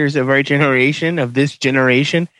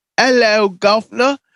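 put-on stock British accent, pitched up; 7 semitones higher than usual. Mimicking what British people say, in a put-on British accent. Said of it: "As the British people say".

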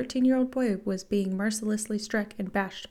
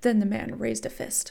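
ordinary delivery, nothing marked

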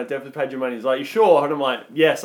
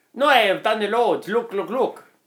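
badly done, put-on Italian accent; 8 semitones higher than usual. Retelling a Vietnamese man's words to a friend: bad accent sounding Italian. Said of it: "That was Italian".

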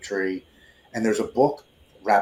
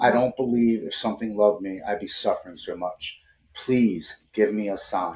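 tearful, crying, pleading tone. Retelling a plea made at a memorial tree: reenacting a tearful plea. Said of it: "I go up to the tree and I'm crying".

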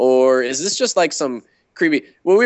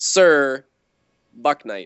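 Sir hit hard, rest said lightly. Suggesting how to pronounce the name sir buck knight: stress on sir. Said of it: "with the emphasis on Sir".

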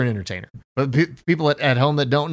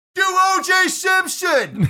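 play-acted, very high screaming. Imagining shouting at a lawyer from the back of a courtroom, mock screaming. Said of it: "And I'm screaming".

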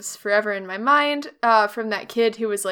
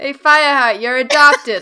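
put-on drunk wine aunt voice, New Jersey accent; 5 semitones higher, 11 dB louder than usual. Speaking to Fireheart in a put-on wine aunt voice. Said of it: "that's my wine aunt voice".

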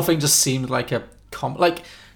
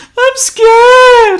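sudden sobbing, tearful wail, very high and loud; 14 dB louder than usual. Retelling a scene where a flirty character suddenly breaks down: imitating someone breaking down crying. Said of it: "breaks down in tears and goes".

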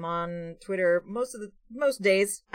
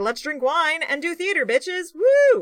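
very high, wild, rowdy party whoop; 10 semitones higher, 8 dB louder than usual. Describing a combined role-play character, then voicing a cleric of Dionysus. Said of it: "a cleric of Dionysus who was like".

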